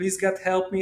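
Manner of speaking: usual speaking voice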